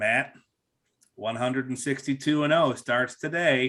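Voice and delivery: mock bone-dry, flat, expressionless deadpan delivery. Speaker retells a coworker stopping at his cube every year, imitating Wild Bill's deadpan. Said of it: "he was a deadpan guy anyway".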